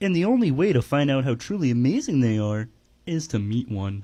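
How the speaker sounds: cartoon frog puppet character voice. Showing off an impression after being asked to do it: Kermit the Frog voice. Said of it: "I can do a Kermit the Frog impression".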